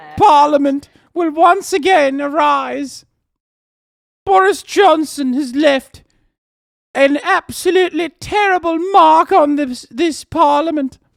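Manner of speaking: put-on high, loud English accent. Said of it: "your general English accent is actually on point".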